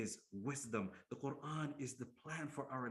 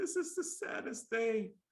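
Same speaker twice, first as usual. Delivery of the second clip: acted-out weepy sobbing wail, very high and loud; 10 semitones higher, 7 dB louder than usual. Retelling a story, the speaker quotes people who came to the ruler imitating people crying. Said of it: "they came crying and they said".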